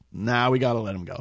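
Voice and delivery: plain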